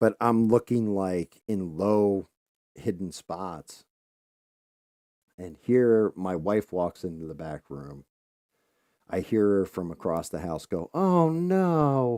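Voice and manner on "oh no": very high, loud, dismayed cry, stretched "no". Retelling hearing a wife call out from across the house: imitating wife's bad-news voice. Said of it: "And I know that noise".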